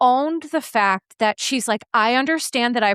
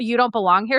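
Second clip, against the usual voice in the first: put-on intimidating tone. Retelling an attempt to intimidate someone: imitating an intimidating tone. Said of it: "intimidate her and be like".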